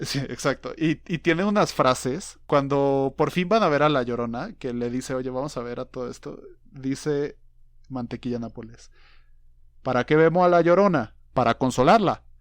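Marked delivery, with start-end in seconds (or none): 9.8-12.2 loud, raised, put-on Cuban accent. Retelling a line Mantequilla Nápoles says, the speaker does a Mantequilla Nápoles impression. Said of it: "Perdón por el acento".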